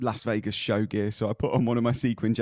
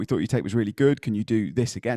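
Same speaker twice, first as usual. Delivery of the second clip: usual speaking voice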